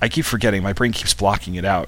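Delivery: normal talking voice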